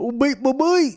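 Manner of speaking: very high, loud, slow put-on voice. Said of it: "Can you say something else in that voice?".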